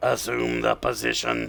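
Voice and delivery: rough, creaky, raspy robot voice. Doing an impression of a robot's best-known line: impression of the robot Fisto. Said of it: "I'm gonna do my best to do an impression of it".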